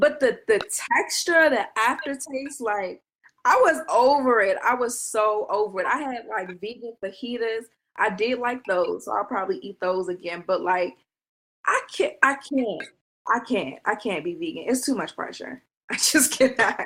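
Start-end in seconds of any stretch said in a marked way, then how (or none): 11.6-16.9 sounding frazzled and stressed. Explaining why going vegan is too hard, sounding stressed out. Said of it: "You sound so stressed out".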